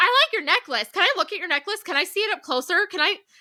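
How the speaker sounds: play-acted, frantic, high, rushed panicky babble. Recounting a medical procedure, the speaker acts out their own panicked chatter. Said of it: "Like losing my mind".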